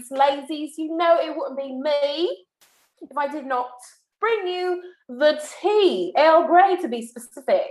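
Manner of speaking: put-on British accent. Introducing this week's Bravo news to the ladies, in a Love Island British accent. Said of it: "I'm going to use my accent to introduce this week's Bravo news".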